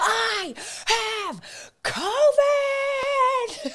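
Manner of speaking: very high playful scream, "covid" stretched out. Joking about how the guest announces having covid: mock screaming.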